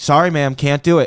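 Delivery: put-on curt, snippy tone. Retelling a flight attendant refusing a request: imitating a curt flight attendant. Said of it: "Already getting, like, attitude".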